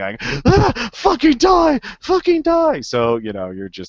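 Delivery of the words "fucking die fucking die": screaming, much higher pitch. Voicing a character firing a gun in a tabletop game, screaming. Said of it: "You're screaming inarticulately".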